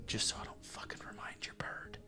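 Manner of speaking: hushed voice. Voicing a character who leans in to warn a player: whispering. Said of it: "he whispers to you".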